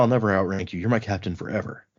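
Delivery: ordinary delivery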